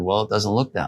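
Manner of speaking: ordinary delivery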